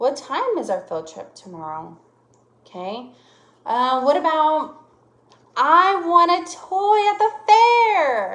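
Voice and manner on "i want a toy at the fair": eager, loud, very slow, "fair" stretched out. Teaching punctuation, the speaker demonstrates a sentence, sounding excited. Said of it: "I'm sounding excited".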